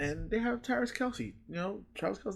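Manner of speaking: sarcastic, pitched high.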